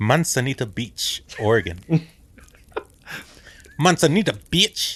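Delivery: put-on Mexican Spanish accent. A speaker repeats a place name like a Mexican, Mexican accent. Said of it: "let me say it like a Mexican".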